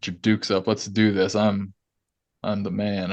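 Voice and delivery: ordinary talk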